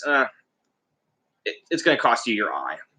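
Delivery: dry, mocking, sarcastic sing-song tone. Retelling a myth where a god answers a request: imitating a sarcastic reply. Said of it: "Mimir kind of sarcastically says".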